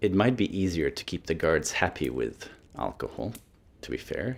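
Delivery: very quiet, hushed half-whisper. Narrator voicing Atka to the group after news the alcohol is running out, half-whispering. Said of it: "Atka sort of whispers to you all".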